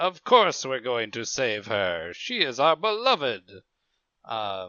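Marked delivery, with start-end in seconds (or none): 0.0-3.4 grandiose, booming, swooping declaiming delivery. Speaker describing a character's voice to the others: imitating the Smitten's grandiose voice. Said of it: "this kind of grandiose".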